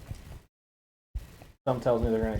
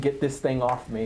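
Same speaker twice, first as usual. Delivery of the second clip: plain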